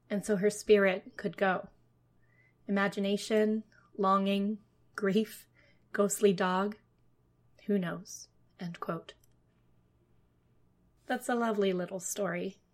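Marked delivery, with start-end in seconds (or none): none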